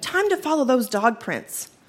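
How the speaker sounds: ordinary delivery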